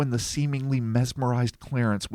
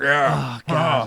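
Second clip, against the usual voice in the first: grunted sound; 2 semitones higher, 5 dB louder than usual. Voicing a creature's grunted answer in a story: affirmative grunt. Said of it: "Like a grunt".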